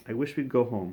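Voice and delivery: ordinary delivery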